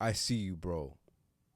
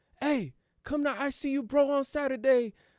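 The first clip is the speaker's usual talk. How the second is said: high-pitched yell. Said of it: "and just yell out".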